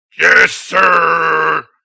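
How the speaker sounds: rough, creaky, raspy voice with "sir" drawn out. Act out Reed answering the drill instructor in a Cookie Monster voice. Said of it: "he sounded like the Cookie Monster".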